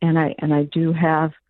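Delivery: normal talking voice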